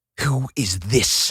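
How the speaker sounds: hissed, trying to sound ominous. Narrating a story where one character confronts another: hissed. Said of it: "he hissed".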